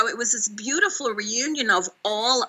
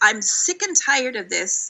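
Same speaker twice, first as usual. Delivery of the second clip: plain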